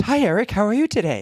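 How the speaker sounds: put-on bright, upbeat, high, chirpy, optimistic voice. Retelling a woman's phone call from the police department, imitating an optimistic voice. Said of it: "the woman's voice was so optimistic".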